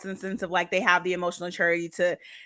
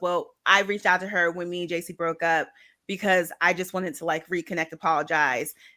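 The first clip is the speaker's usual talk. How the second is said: normal talking voice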